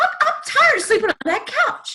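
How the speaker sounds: put-on very high-pitched, childlike pleading voice. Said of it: "He sounded like a little kid".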